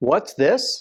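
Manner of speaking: dry, heavily sarcastic, jabbing tone. Retelling a partner's reply at an investor meeting: imitating Samir's sarcastic question. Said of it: "Very sarcastically".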